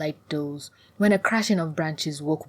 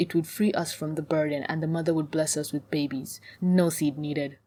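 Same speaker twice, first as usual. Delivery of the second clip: ordinary delivery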